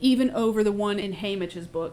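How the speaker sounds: ordinary talk, nothing marked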